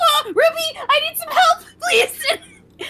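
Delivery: very high, loud panicked cry. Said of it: "Oliver panicking".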